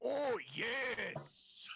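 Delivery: very high, bursting, crash-through shout. Voicing a figure bursting out of a tree: Kool-Aid Man shout. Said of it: "He just Kool-Aid Man does?".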